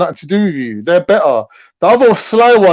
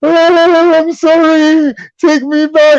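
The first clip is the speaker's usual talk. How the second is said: acted, very high, very slow, drawn-out sobbing; 10 semitones higher, 3 dB louder than usual. Retelling an ex banging on the door: imitating a man crying. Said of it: "and he was crying".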